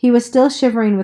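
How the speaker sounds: usual speaking voice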